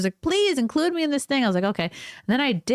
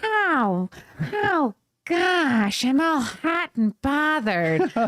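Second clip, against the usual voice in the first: put-on accent, drawn-out "how" with narrowed throat; 4 semitones higher than usual. Showing a listener how easy the accent is for any woman, in a Stifler's mom accent. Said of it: "a very easy accent to do for any woman. You just go".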